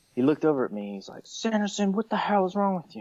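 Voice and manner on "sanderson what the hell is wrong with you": mock exasperated, very high, angry yell. Retelling how the V C yelled at him: imitating an angry yell. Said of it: "he just got pissed off".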